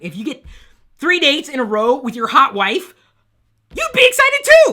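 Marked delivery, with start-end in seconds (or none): 3.7-4.7 voice suddenly leaps very high and loud. Talking to the folks listening about date night, voice jumping up in pitch. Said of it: "why did my voice jump up there?".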